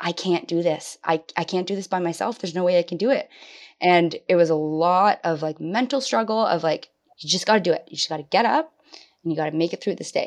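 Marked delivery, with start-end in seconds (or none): 0.0-3.3 mock panicking voice. Recalling calling him when left alone with two small children, retelling past panic. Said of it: "I just panicked".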